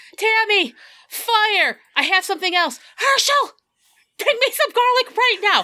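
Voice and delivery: very high-pitched, intense, focused shrieking screams. Playing a character who takes charge against a monster, screaming. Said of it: "she screams out".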